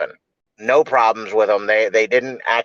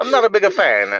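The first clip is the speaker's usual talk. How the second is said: very high-pitched put-on Italian accent; 10 semitones higher than usual. Repeating the other speaker's words back, in a mock Italian accent. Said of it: "Why you sound Italian?".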